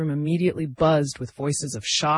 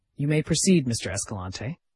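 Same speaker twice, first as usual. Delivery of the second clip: ordinary delivery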